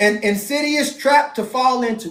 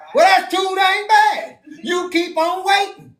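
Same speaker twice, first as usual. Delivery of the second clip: put-on grandpa voice, a touch higher pitched; 7 semitones higher than usual. Comparing complaining to a scene, imitating the little girl from Holes. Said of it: "that's how we sound to the Most High".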